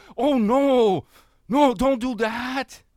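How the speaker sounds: high, slow, nervous voice. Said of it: "responded nervously".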